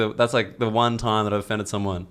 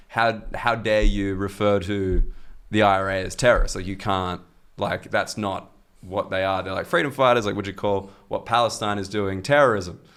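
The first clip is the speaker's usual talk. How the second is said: plain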